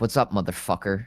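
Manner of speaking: put-on, mock-aggressive cold-caller sales voice. Describing a guy who calls businesses, imitating an aggressive cold caller. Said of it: "he's just this dude".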